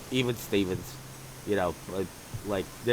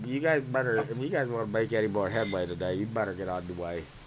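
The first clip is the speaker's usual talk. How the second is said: ordinary talk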